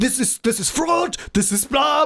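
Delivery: put-on German accent. Retelling what people on a show say, in thick German accent English. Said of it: "mit so einem richtig deutschen, englischen Akzent".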